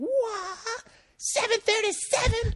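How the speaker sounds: put-on shout. Retelling how a guy jumped off boxes and yelled, imitating a loud shout. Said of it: "as loud as he could".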